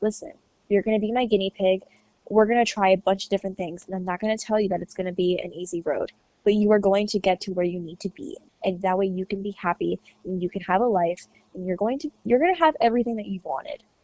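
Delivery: ordinary talk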